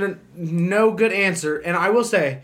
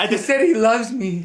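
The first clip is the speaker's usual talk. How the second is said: in a woman's voice; 3 semitones higher than usual. Acting out how a woman takes a man saying he loves her, woman voice impression. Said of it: "my best impression of how a woman takes that".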